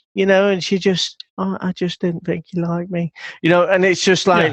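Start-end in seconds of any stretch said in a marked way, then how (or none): 1.3-3.1 put-on tiny, girlish, little baby voice. Retelling how a contestant answered when confronted: imitating a little baby voice. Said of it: "she had that little baby voice".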